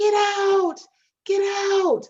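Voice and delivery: high-pitched, stretched-out, drawn-out screaming. Speaker recounts a man coming down the runway at the office; retelling a man screaming. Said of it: "he's screaming".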